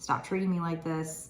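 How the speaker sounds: ordinary talk, nothing marked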